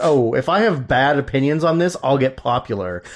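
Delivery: plain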